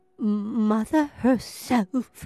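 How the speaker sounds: halting, strained words forced out with effort. A character in the story replies, getting the words out with difficulty. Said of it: "getting the words out with difficulty".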